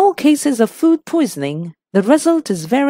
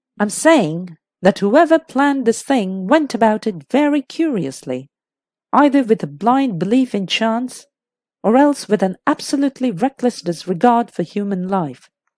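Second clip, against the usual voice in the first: ordinary delivery, nothing marked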